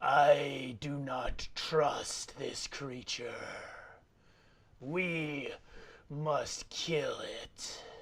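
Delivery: voice crawling like worms through flesh. Narrator voicing Ambassador Hate speaking into everyone's minds, voice like worms crawling through flesh. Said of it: "in a voice like worms crawling through flesh".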